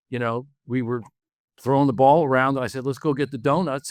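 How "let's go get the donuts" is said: usual speaking voice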